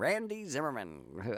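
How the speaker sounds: put-on old-time newsreader voice. Recalling a radio reporter's voice that you love, do Randy Zimmerman's 1940s broadcaster voice. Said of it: "he had that kind of voice".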